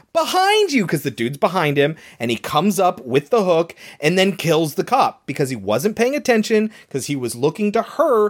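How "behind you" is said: play-acted, very high, high-pitched shouted yell. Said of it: "she's yelling".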